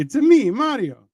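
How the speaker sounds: pitched way up, cartoon style. Explaining a little-known fact, quoting the catchphrase: Mario voice. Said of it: "Mario says".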